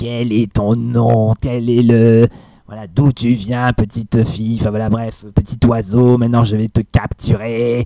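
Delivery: raspy witchy dragoness voice. Showing how a female dragon sounds: hoarse witchy dragon voice. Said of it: "c'est vraiment une petite voix comme ça".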